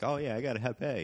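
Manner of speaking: mock casual, offhand joking tone. Imitating how another speaker mentioned an illness: imitating an offhand joke. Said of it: "you said it like a joke".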